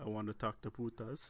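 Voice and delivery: flat, level, even put-on monotone. Retelling how he asked to talk to Putas, imitating his monotone. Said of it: "he's all like monotone".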